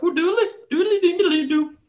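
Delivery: very high, chirpy voice in a dwarfish dialect. Voicing one of them calling up to the group, chirping in a dwarfish dialect. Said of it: "chirps up in what appears to be a dwarfish dialect".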